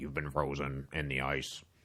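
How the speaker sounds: low, flat, mechanical robot voice. Describing a concert's staged story to a listener, in a robot voice. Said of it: "kind of like robot voice".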